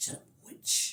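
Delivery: soft, voiceless, hissed put-down.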